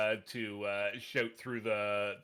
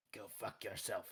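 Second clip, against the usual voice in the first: very soft, under-the-breath mutter; 11 dB quieter than usual. Voicing a character lining up a crossbow shot: said quietly in character. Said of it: "just kinda quietly".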